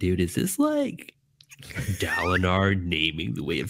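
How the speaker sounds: put-on animated, swooping American accent. Retell to Jimmy what he said to you, in your best American Jimmy voice. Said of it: "that's that's the best American Jimmy voice I could do".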